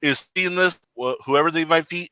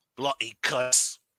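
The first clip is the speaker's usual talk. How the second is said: absolute worst, terrible put-on British accent; 2 semitones lower, 8 dB quieter than usual. Replying to the other speaker's joke: worst fake british accent. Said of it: "the absolute worst fake British accent ever".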